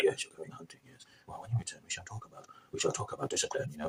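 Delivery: put-on very quiet voice. Acting out a film scene where a character confronts another man: imitating a very quiet threat. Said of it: "I'm trying to hide my northern accent".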